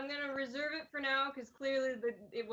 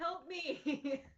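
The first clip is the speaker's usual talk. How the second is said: mild voice, called out loudly to carry; 4 semitones higher than usual. In a role-play scene, answering someone yelling to you: yelling for help. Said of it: "then I yell back".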